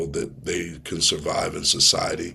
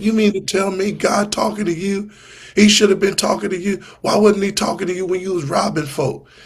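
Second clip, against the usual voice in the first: very high, loud, angry scolding tone; 8 dB louder than usual. Retelling his mother's reaction when he called her: imitating mother going off. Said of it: "my mother went off".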